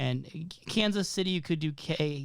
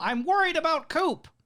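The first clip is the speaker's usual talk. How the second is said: very high, loud, shrill voice; 13 semitones higher, 6 dB louder than usual. Retelling how a character did an impression: Gordon Cole impression. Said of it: "this great impression of Gordon Cole".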